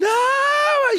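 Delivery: very high, long, shrill, desperate scream. A father retells his daughter's reaction as the roller coaster drops, imitating a desperate scream. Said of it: "ela começa a gritar desesperada".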